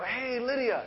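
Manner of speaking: put-on excitement. Parent imitates telling daughter Lydia to do her homework, mock-excited voice. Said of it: "like do it in an excited way".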